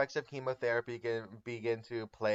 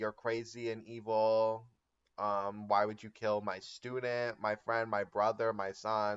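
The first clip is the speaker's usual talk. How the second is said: plain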